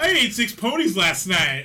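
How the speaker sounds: booming, swooping, belted, every word stretched out. Retelling a scene as the dragon Smaug: Tracy Morgan impression. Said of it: "gets all kinda Tracy Morgan on him and goes".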